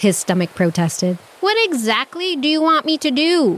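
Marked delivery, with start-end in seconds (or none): 1.4-3.6 high-pitched, yelled outburst. A hungry animal arguing with his own growling stomach, shouting. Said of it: "He shouted".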